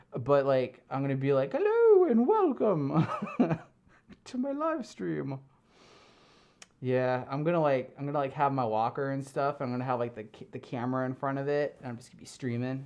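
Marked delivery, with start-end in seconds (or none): 1.5-5.3 put-on British accent, very high and drawn out. Imagining live streaming from a nursing home someday: put-on British accent. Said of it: "I don't know why I'm British".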